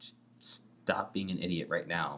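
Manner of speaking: ordinary talk, nothing marked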